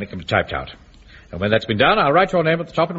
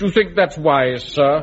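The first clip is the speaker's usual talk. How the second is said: haughty, condescending, lofty disdain; 4 semitones higher than usual. Speaker scolds Wilson after announcing a promotion; mocking Wilson's supercilious voice. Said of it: "say in that supercilious voice".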